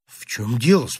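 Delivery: sympathetic tone. Narrator reads a sailor asking a groaning man: sympathetic question. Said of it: "спросил с участием".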